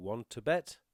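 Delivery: rising intonation at the end of bet. Teaching the expression of the week, rising intonation on bet. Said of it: "It's rising intonation".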